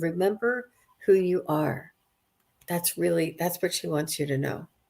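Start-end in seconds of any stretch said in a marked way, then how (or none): 0.0-1.9 acted-out whisper. Retelling how she leaned down whispering in his ear: imitating a whisper. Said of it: "she is whispering in, in your ear saying".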